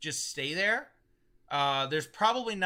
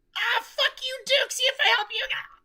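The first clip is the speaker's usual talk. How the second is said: shrill, shrieking, screeching monster voice; 8 dB louder than usual. Blasted by a bolt, the creature screeches back at the duke. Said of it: "and it screeches".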